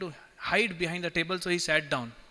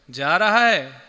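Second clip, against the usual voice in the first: play-acted, very loud, booming, jeering mocking tone; 8 dB louder than usual. Retelling how devotees mockingly echo as a sleeper enters: imitating a mocking echo. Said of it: "devotees mockingly".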